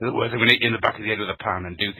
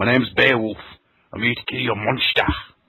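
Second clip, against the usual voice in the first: put-on cockney accent. Quoting a Beowulf line after praising the most cockney man: Ray Winstone impression. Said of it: "He is the most cockney man in the world".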